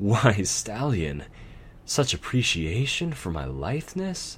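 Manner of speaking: coy, playful, teasing swooping lilt. A nightmare responds to a stallion's careless words, playful. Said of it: "she said playfully".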